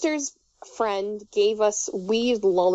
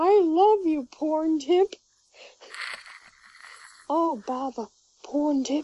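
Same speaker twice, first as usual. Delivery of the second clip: slow, drawn-out, unhurried, pitched-up character voice; 7 semitones higher than usual. Retelling a funny convention panel, acting out the line in a Winnie the Pooh voice. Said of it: "imagine Winnie the Pooh going".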